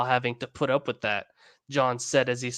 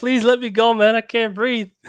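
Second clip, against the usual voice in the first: put-on very high-pitched, raised begging; 10 semitones higher, 8 dB louder than usual. Acting out a character in a story who begs to be let go: mock begging. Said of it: "he's begging him".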